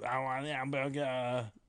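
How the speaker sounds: odd, weird German accent, gibberish-German. Friends joking about how a foreign language sounds, one says a line: weird German-sounding delivery. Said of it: "that's like a weird German thing".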